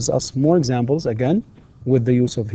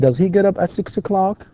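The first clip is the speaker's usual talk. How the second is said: rising questioning tune on o'clock; 7 semitones higher than usual. English lesson reading a yes-no question: rising intonation on 'o'clock'. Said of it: "في نهاية السؤال يكون فيه rising intonation".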